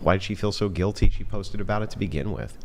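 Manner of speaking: usual speaking voice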